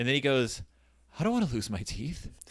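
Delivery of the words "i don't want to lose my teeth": put-on near-crying voice, quieter. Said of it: "on the verge of tears".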